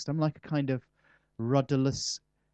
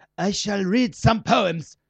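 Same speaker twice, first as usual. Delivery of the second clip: put-on high, loud, slow weak East European accent. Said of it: "with my lame East European accent".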